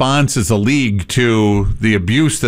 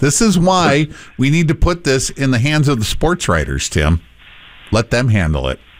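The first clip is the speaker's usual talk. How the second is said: normal talking voice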